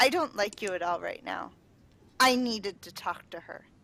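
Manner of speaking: very firm, resolute, unbending, quick delivery. Narrating a character who glares at a sea elf, very firm voice. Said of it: "Her voice is very firm, firmer than what you're kind of used to".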